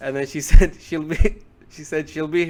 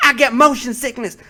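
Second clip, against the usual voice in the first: put-on high, yelled scolding; 8 semitones higher, 4 dB louder than usual. Retelling how a teacher scolds students who shake their legs: imitating someone yelling. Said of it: "She will yell at you".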